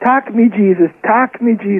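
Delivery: mild, repeated, pleading shout. Retelling what their father shouted after a woman quoted the Bible, retelling a shout. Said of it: "he was shouting".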